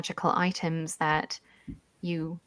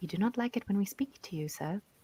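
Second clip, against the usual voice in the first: low-key, soft, quietly spoken delivery; 3 semitones higher, 8 dB quieter than usual. Voicing a healer quietly answering the lord's question: quiet voice. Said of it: "she kind of quietly goes".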